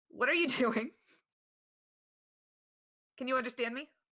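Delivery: very panicked, frantic voice. Player character trying to get a creature not to attack, in a panicked voice. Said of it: "in a very uh panicked voice".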